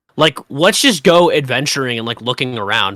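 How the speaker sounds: normal talking voice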